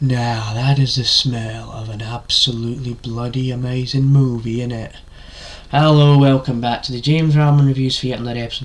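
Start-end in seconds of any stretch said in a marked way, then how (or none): 0.0-4.9 slow, drawn-out put-on voice. Opening a movie review video as an impression, Danny Dyer impression. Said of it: "I did an impression of Danny Dyer".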